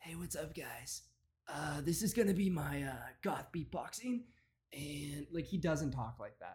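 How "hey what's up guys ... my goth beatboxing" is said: put-on, quieter, sultry, sexy-sounding voice. A man greets viewers at the start of his video, trying to sound sexy. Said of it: "He's trying to be so sexy".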